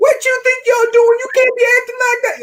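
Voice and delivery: very high-pitched, furious shouting woman's voice. Retelling how a woman shouted at him as he crossed the street; retelling a woman's shouting. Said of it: "I hear her just shouting at me".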